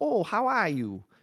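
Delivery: put-on Upper Midwest Minnesota accent. Quoting a woman in her mid seventies, an action hero: minnesota accent. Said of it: "she's got that Minnesota accent so she's like".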